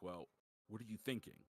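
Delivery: put-on grave, hushed, somber tone. Describing a game scene, Mimir speaks to Kratos: imitating Mimir's somber voice. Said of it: "Mimir says to him in a very somber voice".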